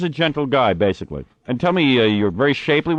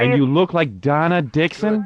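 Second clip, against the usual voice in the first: plain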